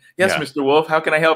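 timid, meek, overly polite, eager-to-please voice. Imitating a film character speaking to Mister Wolf: imitating a meek, overly polite character. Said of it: "very nice to him and kinda meek".

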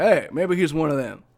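ordinary talk

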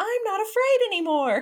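very high, defiant shouted yell. Describing a character who overcomes his fear of a neighbor, retelling a yell. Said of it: "he goes outside and he yells".

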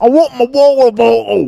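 very high, loud, shrill put-on British accent. Teasing a British person in the conversation, in a mock British accent. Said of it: "That's what you sound like".

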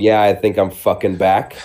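ordinary delivery

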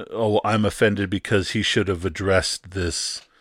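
ordinary talk

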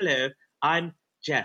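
put-on English accent. Acting out a learner's greeting to them, in a put-on english accent. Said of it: "spoke with English accents".

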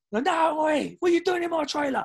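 put-on drunken voice, pitched way up, protesting tone. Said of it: "he's hammered".

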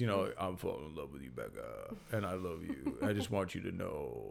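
very quiet, soft, croaky frog voice. Mocking how a guy sounds when he talks: imitating a frog-like voice. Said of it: "he just kind of sounds like a frog when he talks".

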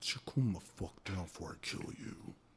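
low, hushed, menacing scary voice. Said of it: "That's what it sounds like".

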